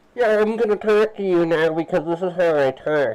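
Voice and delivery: very loud, high-pitched chat bot voice. Retelling how the chat bot talks on stream: imitating the chat bot's voice. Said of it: "it's like she's going like this".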